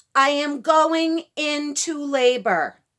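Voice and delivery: very loud, high, attention-grabbing public announcing voice. Retelling announcing to everyone around, retelling a very loud announcement. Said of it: "in a very loud voice".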